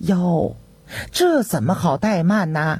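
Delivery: ordinary delivery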